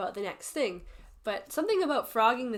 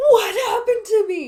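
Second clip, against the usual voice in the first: very high, loud, drawn-out shocked gasp; 13 semitones higher, 14 dB louder than usual. Speaker recalls getting ready for bed in the bathroom, retelling a gasp.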